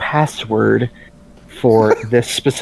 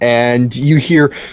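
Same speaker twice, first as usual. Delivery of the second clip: ordinary talk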